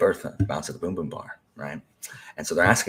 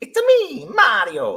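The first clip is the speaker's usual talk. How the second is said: big, loud, cartoonish put-on Italian accent; 9 dB louder than usual. Telling someone who isn't trying how it should sound, Mario voice. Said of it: "do a Mario voice".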